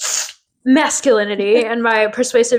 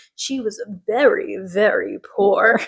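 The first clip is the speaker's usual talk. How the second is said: very slow, insinuating, suggestive drawl. Retelling a character's line from a show, imitating a suggestive tone. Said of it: "suggestive way".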